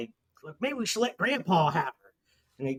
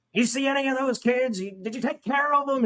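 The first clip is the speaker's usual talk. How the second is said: mock high-pitched hollered yell; 8 semitones higher than usual. Retelling a movie scene where the cook talks to Leatherface: imitating the cook yelling. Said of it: "he's yelling at him".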